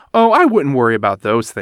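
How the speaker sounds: ordinary delivery, nothing marked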